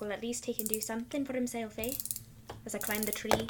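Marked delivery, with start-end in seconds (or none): 0.0-1.9 soft, low muttered words under the breath. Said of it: "I mutter to Ginger".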